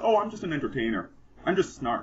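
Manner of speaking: ordinary talk, nothing marked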